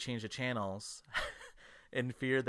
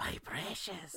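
pitched-up, high cave-creature voice; 7 semitones higher, 5 dB quieter than usual. Joking about someone hunched over eating fruit: Gollum voice. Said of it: "hunched over like Gollum".

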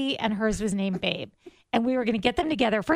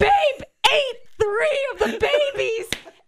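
play-acted screaming through sobs, very high-pitched; 5 dB louder than usual. Retelling Karen's phone call about the babies, imitating her sobbing and screaming. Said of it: "she's sobbing, and she's screaming and saying".

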